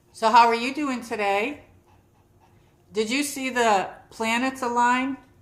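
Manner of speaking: loud, high-pitched yelled delivery. Greeting a viewer who just joined the stream: yelling. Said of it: "I don't know why I'm yelling".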